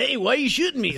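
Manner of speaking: shrill, high, loud, booming cartoonish yell. Playing the sled dog in the opening scene: Seth Rogen impression. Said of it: "that's my Seth Rogen impression".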